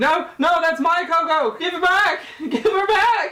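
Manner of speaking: very high, shrill shouting. Game master voicing a woman who yells at the player, yelling. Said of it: "She begins to yell at you".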